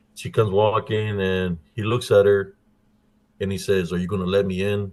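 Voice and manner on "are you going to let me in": ordinary talk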